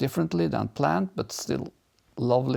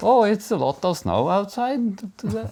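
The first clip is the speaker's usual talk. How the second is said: Fargo accent, higher pitch; 7 semitones higher, 4 dB louder than usual. A speaker from Norway demonstrates how Midwesterners hear him, in a Fargo accent. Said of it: "I have the Fargo accent".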